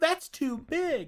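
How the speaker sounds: put-on very high, sugary, sweet girly voice. Speaker mocks how Harona might talk: imitating Harona's sweet girl voice. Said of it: "use her like sweet girl voice".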